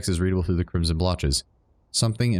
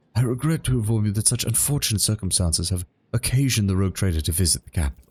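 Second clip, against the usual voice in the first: put-on weathered, dignified older man's voice. Voicing the governor greeting Your Lordship in an older voice. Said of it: "I gave him an older voice than that".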